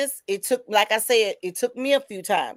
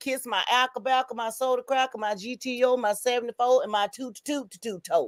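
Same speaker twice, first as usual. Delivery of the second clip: put-on childlike, sing-song playground taunting voice; 6 dB quieter than usual. Refusing to feel guilty, saying it like little kids: imitating little kids taunting. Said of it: "I'ma say it like the little kids".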